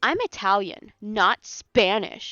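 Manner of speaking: indignant, angry, offended, loud and slow. Imitating a woman whose name you weren't sure how to pronounce, mock-angry. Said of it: "She was so angry".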